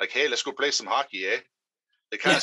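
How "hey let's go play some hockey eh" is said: put-on Canadian accent. Describing how people up north in Michigan talk, imitating a Canadian accent. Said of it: "they speak like Canadians".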